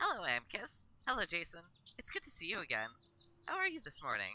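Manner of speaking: bright cheery character voice. Voicing Alexios greeting two people: bright, cheery Alexios voice. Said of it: "Bright, cheery, not depressed".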